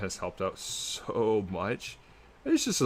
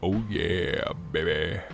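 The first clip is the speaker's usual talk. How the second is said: low, deep put-on voice, played up; 2 semitones lower than usual. Doing a live video, switching into a put-on deep voice. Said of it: "Gotta get that deep voice".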